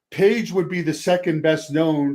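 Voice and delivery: ordinary talk, nothing marked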